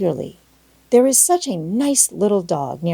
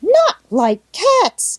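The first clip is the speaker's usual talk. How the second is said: very high, shrill, impassioned, passionate cry; 14 semitones higher, 5 dB louder than usual. Narrator reads the mouse retorting to the girl: shrill, passionate cry. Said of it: "cried the mouse in a shrill, passionate voice".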